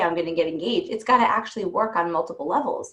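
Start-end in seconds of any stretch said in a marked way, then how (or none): none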